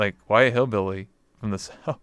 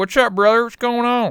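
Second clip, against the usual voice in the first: very high, loud, hearty put-on hillbilly accent; 13 semitones higher, 6 dB louder than usual. Streamer recalling the character he used to play, speak in Kenny K. Kona hillbilly voice. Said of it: "so I sound like a hillbilly on purpose".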